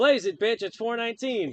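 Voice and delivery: blaring female assistant voice. Describing their phone announcing the time in public, in a loud female computer voice. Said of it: "a female computer voice would loudly".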